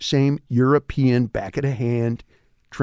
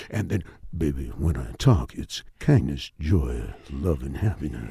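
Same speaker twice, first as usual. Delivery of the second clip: very low, soft radio DJ voice; 10 semitones lower, 5 dB quieter than usual. Speaker shows how he sounds when he talks, in his dj voice. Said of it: "And that's my DJ voice".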